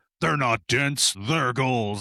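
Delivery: voice of a big, burly, grizzled man. Retelling the end of a beer ad: imitating a big grizzled man. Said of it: "you hear this big fucking grizzled man go".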